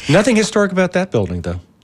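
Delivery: dry sarcasm. Asked to name her favorite historic structures, a guest remarks: sarcastic. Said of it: "I am being sarcastic".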